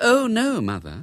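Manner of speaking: steady, calm, unruffled, even delivery. Bella answers her mother's question in front of the guests: calmly. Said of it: "said Bella calmly".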